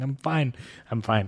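weepy, reassuring tone, words spoken through tears. Retelling joining a Zoom call with the CPA: imitating own crying. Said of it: "I'm, like, crying".

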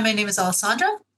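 rising upspeak tune on Alessandra. Demonstrating upspeak in a self-introduction, rising question tone on alessandra. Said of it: "This idea also of upspeak".

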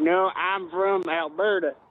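obviously fake, put-on Southern American accent. A caller answers the host's question, in a fake southern accent. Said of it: "with a nice fake southern accent".

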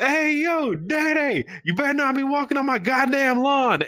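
mock shrill, high-pitched yell at full volume. Retelling dad yelling at Mando in front of all the neighbors: retelling dad's loud shout. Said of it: "loud as shit in front of all of my neighbors".

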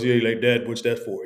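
deep, casual natural voice.

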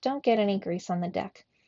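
ordinary delivery

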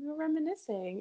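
put-on soft voice. Recounting what a woman kept saying during a visit: imitating Kim's really soft voice. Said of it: "Like in a really soft voice".

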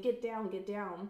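plain

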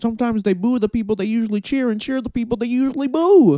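snide sneer, very high-pitched and loud. Talking about wrestling crowds, doing a Michael Cole impression being an asshole. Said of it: "my Michael Cole being a complete asshole impression".

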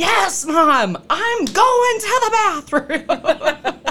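mock shrill, very high, loud shout. Retelling yelling to Mom as a brother walks in, retelling a loud yell. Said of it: "I yell it as loud as I can".

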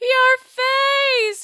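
very shrill, loud laughing gasp. Doubled over in laughter in front of him, she speaks; gasping between laughs. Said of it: "she gasped between laughs".

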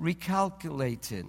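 put-on English accent, sat-nav lady voice. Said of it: "this lady come with a wonderful English accent".

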